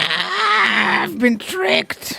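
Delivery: very high, raspy goblin screech. Narrating a story and voicing a tricked goblin: yelling goblin voice. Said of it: "The goblin yells".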